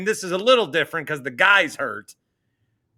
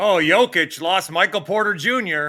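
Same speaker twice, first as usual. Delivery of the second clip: ordinary delivery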